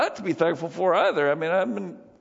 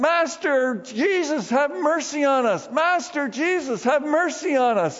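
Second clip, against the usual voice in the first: mock slow crying out in a loud, raised voice; 7 semitones higher than usual. Retelling how ten lepers called to jesus, the speaker acts out crying out in a loud voice. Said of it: "In a loud voice, they're crying out".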